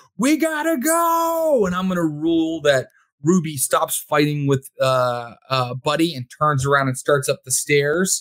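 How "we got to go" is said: very high-pitched yelling, go drawn out. Voicing Curtis during a fight scene: yelling. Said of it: "He's just yelling".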